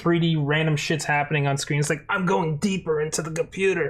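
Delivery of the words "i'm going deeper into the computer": normal talking voice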